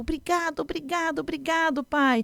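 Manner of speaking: put-on high, thrilled, delighted child voice. Retelling a story: the child thanks the father, imitating a cheerful child. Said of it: "A criança responde toda faceira".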